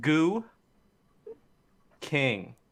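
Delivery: goo and king split apart with clear gap. Joking about a hyphenated name, saying it with pause between goo and king. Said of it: "You gotta really enunciate that space".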